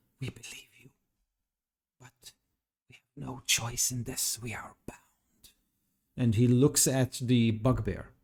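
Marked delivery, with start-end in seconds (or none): 0.2-5.0 very high-pitched, rushed whisper. A storyteller voicing one of the figures as it answers, in a high-pitched whisper. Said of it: "in a very high pitch tone, but you can kind of hear it. he whispers".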